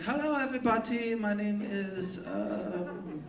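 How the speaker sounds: very badly done German accent. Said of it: "I did the worst accent".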